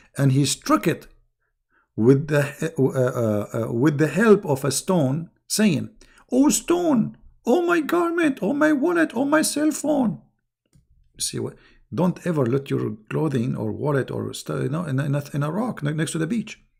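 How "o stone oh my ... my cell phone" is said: very high, hoarse, ragged scream. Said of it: "he was screaming, saying".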